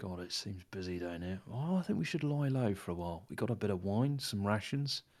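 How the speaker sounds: hushed, quiet half-whisper. A player speaks as Griff to his companion, Griff half-whispering. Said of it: "Griff just whispers to the other".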